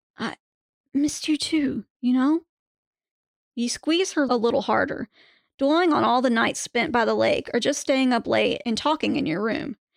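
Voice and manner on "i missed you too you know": teary whimper, voice close to cracking. In a second-person story, you hug her and answer, almost whimpering, near breaking. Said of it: "In an almost whimpering, near breaking voice".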